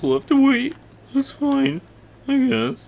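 put-on sobbing in a very high fake cry voice. A Let's Play host, told they must wait for more explosives, in a fake crying voice. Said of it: "That's my cry voice".

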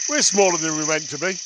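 ordinary delivery

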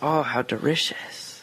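put-on, high-pitched Japanese accent. Retelling what a japanese lady said at the dolphin display, in a japanese accent. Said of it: "her Japanese accent goes".

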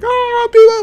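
high, loud, giddy squeal of freakout.

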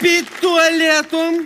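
put-on high-pitched, loud, slow drunken exclamation.

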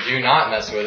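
ordinary talk

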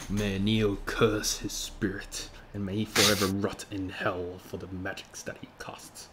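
whispering under breath. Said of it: "he whispers under his breath".

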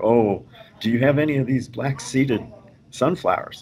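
mock earnest, pleading tone. Retelling how a visitor asked a woman for seeds: imitating someone pleading. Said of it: "he's pleading with her".

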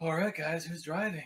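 seductive, hot, sexy voice. In a role-playing game, a character clears their throat and addresses the group, hot voice. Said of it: "That's a hot voice".

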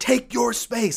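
put-on shrill, very high-pitched screaming shout. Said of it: "I'm screaming".

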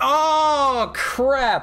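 sudden shrill, very high, loud blurt with long drawn-out Oh. Streaming a card game, right after clicking the wrong card, a loud outburst. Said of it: "I'm sorry for being loud".

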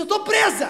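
high, loud, panicked cry.

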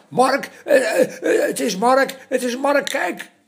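shrieking over each other. As the children running to the window, shrieking over each other. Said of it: "gillen door elkaar".

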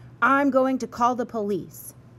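menacing, threatening tone. Bus driver Blake threatens Mrs. Parks after she questions him. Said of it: "Blake threatened".

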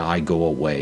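ordinary talk

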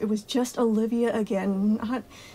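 plain reading voice

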